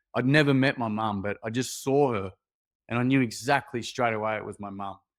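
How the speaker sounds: ordinary talk, nothing marked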